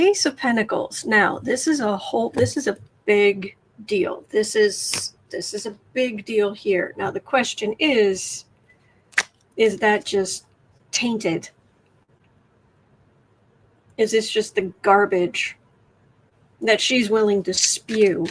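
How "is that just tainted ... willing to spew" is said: angry, mad. Speaking about a woman during a live stream: angry. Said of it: "I'm sorry if I sound so angry".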